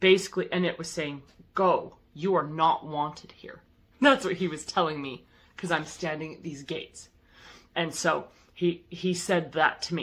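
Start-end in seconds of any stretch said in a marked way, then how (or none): 1.5-3.6 put-on scary voice, slower. Speaker retells what a being at the gates said to him, in a scary voice. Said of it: "he said in this very scary uh, voice".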